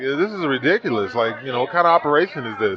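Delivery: ordinary talk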